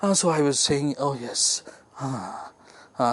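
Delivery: breathless, sighing. Showing how a line sounds after running in: out of breath after running. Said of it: "had I been running and coming here and in a hustle bustle".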